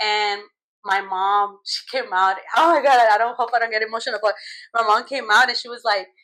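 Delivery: normal talking voice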